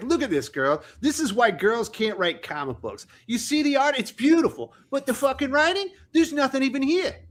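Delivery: put-on Boston accent. Teasing another speaker about showing a comic to his girlfriend, do a Wes impression. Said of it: "we got a little bit of Wes impression there".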